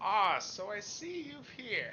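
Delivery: put-on elderly man's voice, slow and swooping. Voicing a character greeting the players: old man voice. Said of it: "do I continue with the old man voice".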